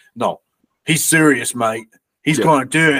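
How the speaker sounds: put-on Australian accent with a plain delivery. Speaker retells a film scene, quoting Lee Christmas in an Australian accent. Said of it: "assigned him an Australian accent".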